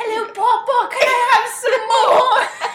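very high, shrill, loud Cockney accent. Joking about how a character should sound, in an Oliver Twist accent. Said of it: "in your head with that accent".

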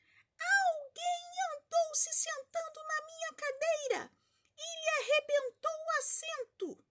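put-on teeny little bear voice, very high and squeaky. Reading the three bears story aloud, voice the littlest bear in a tiny little voice. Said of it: "com sua vozinha pequena miúda".

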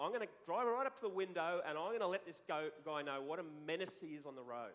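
usual speaking voice

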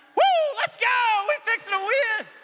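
mock loud, shrill, very high excited whoop. A father retelling what he shouted beside his embarrassed son, retelling excited yelling. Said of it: "I started yelling".

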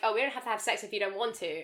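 ordinary delivery

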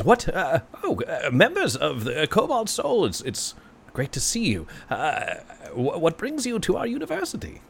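high, swooping, enthusiastic goblin voice. Voicing a small goblin who greets the visitors: enthusiastic goblin voice. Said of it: "he enthusiastically greets you".

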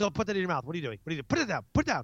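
acted, mock yelling. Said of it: "go yell at the kid".

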